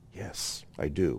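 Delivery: quiet hushed voice. Answering whether he believes Yeshua is God: whispering. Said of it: "But I always have to whisper that".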